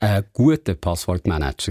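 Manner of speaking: guter stressed with a wide pitch swing.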